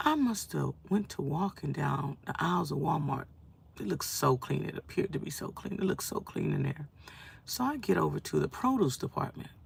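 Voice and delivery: soft, tired, worn-out whisper. Tired and unable to sleep, recounting a trip to Walmart: whispering. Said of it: "I'm sorry for whispering".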